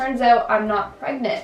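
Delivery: plain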